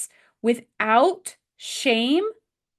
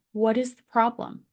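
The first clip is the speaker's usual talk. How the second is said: calm, composed, quiet, hushed voice. A mother shows how she asks her son what the problem is, calm quiet voice. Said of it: "I have to keep my voice very um, calm, quiet".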